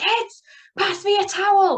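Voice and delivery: very high, drawn-out calling shout. Retelling calling the kids at midnight for a towel: imitating own past shouting. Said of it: "then I'm shouting the kids".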